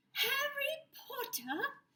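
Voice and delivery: very high-pitched elf voice. After Harry says hello nervously, the creature greets him in a high-pitched Dobby voice. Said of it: "in a high-pitched voice".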